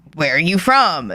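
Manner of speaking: mock-sarcastic, put-on sarcastic delivery. Retelling what a woman asked a man, the speaker mimics her mock-sarcastic question. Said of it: "very sarcastically, not like she actually wants to know".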